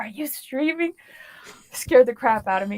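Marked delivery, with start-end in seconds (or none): 0.0-0.9 put-on whisper, much quieter. Speaker retells what their brother asked when he walked in: retelling a whisper. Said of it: "he was like whispered".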